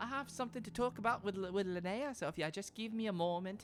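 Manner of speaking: put-on Scottish accent. Voicing Caroline greeting the players while sneaking over: Caroline's Scottish accent. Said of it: "it's like a Scottish accent".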